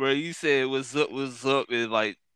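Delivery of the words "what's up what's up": ordinary talk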